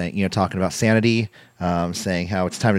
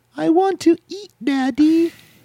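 put-on very high-pitched little kid voice. Talking about Daniel Bryan re-signing with WWE, you play Birdie speaking to Daddy, Birdie impersonation. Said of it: "It's like really good Birdie impersonation".

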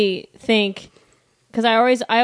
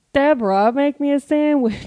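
very slow, deep, drawn-out voice from the throat; 4 semitones higher than usual. Doing Ray again after being asked for him: Ray from Everybody Loves Raymond voice. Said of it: "give me Ray".

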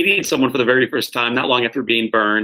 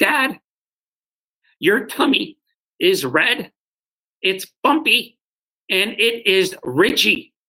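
put-on very slow, high, childlike little-boy voice; 8 semitones higher than usual. A father retelling what his son Jack said about his scars, in Jack's little boy voice. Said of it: "with his little boy voice".

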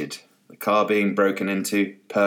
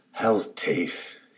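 muttered quietly under breath. Reading a story, the swimmer at the pool mutters under his breath. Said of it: "he said under his breath".

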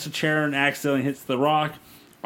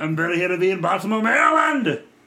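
put-on passable Austrian accent, pitched up; 5 semitones higher, 4 dB louder than usual. Talking with someone who loves your Arnold, slip into a reasonable Arnold impersonation. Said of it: "you do a reasonable facsimile of an Arnold impersonation".

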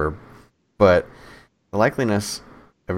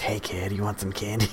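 put-on creepy old lady voice, quieter; 7 dB quieter than usual. Retelling how a lady in a van offered candy: imitating a creepy old lady. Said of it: "Just like that".

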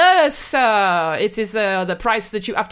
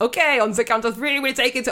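fake German accent sliding into a French accent; 3 semitones higher than usual. Retelling a Family Guy bunker skit, German accent slipping into French. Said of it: "they're French again".

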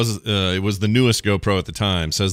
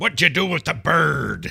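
salty sea-dog voice, bird drawn out; 8 semitones higher than usual. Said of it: "Willem Dafoe's voice".

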